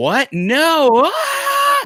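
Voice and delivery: shrill scream, very high and shrieking. Retelling protesting from the back of a police car: retelling a scream. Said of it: "Just screaming".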